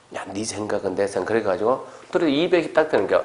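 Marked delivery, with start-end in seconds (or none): 0.1-1.2 low, soft, conspiratorial whispering murmur. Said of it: "둘이 와가지고 속닥속닥 하더래요".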